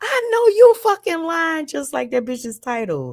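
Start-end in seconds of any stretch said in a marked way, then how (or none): 0.0-1.7 play-acted, shrill, very high screaming. Retelling watching a panel on the computer: retelling own screaming. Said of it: "I'm screaming like".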